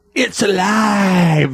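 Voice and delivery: high exclamation with "alive" stretched out. Answering a movie quote quiz, imitating Frankenstein saying it's alive. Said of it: "That's how he says it, too".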